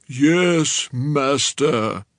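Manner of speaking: zombie monster voice with a drawn-out "yes". Narrator reads a young man's reply to advice, in a zombie Frankenstein voice. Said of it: "He did a zombie Frankenstein voice".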